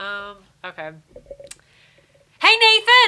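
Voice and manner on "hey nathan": shrill, very high, loud yell. Showing what the yell sounds like when asked to: yelling. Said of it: "what does the yell sound like?".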